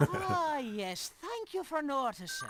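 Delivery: put-on high, sing-song, lilting Irish accent. A character answers a remark about the accent, in a high lilting Irish accent. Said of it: "in a kind of a high lilting Irish accent".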